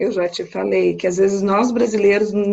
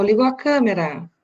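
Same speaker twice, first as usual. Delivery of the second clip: usual speaking voice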